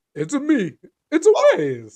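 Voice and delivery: very high, swooping, drawn-out voice. Greeting the show partner on camera: Mario voice. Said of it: "pull off my Mario voice".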